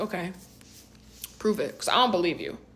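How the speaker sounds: usual speaking voice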